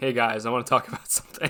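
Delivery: mock sulky, glum, low, sullen voice. Planning a clip edit, acting out how Andrew opens the group chat, mock-sullen. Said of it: "my sullen voice".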